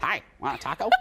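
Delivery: put-on tiny elderly woman's voice. Asked what the woman sounded like, the speaker is imitating a little old woman. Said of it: "What did she sound like?".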